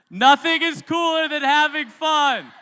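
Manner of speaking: very loud, high, drawn-out, all-out group yell. Leading others in repeating a phrase several ways, this time yelling it. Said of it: "And now let's yell it".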